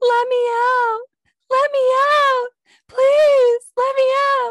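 put-on very high, very loud, shrill child's screaming. Retelling a funny internet video of ring camera audio, imitating a little kid screaming. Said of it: "like a little kid screaming".

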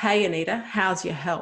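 acted-out, yelled, calling out. Retelling how one of them yelled out to the speaker in front of the school: retelling a yell. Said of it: "yelled out to me".

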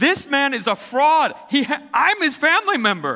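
shrill, very high, very loud angry yell. Retelling a friend yelling at her uncle from the car: imitating someone yelling. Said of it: "started cussing at him and yelling at him like".

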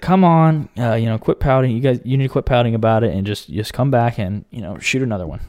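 usual speaking voice

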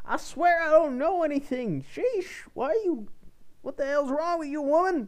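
very high, shrill, loud yelping voice. Narrating a roleplay, voice a man yelping at the woman questioning him. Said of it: "he yells out, like, yelps".

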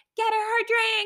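very high-pitched yelling. Retelling how he yelled at the bartender: imitating someone yelling. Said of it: "starts yelling at the bartender lady".

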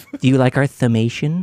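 put-on, mock lisping speech. Joking about the word thumbmation sounding like summation: put-on lisp. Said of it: "like they're saying summation with a lisp".

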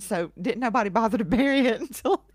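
speaking through laughter. Recounting how long a family waited to bury something, laughing while talking. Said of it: "I'm laughing".

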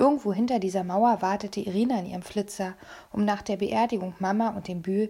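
ordinary delivery

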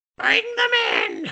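very high, squawking crow-like bird yell. Asked to do the crow's line, delivering it in the crow voice. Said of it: "Can you do the line?".

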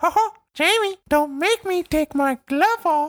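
very high, squeaky cartoon mouse voice. Joking around with others in the group, doing a Mickey voice. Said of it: "I can't do a good Mickey".

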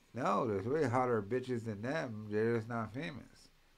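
ordinary talk

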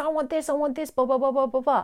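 put-on high, insistent, demanding child voice. Parenting speaker showing how a screaming child talks: imitating a child. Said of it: "your child's most likely talking like this".

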